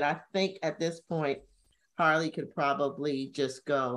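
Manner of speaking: plain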